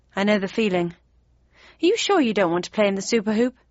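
ordinary delivery

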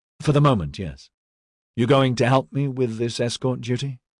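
plain reading voice

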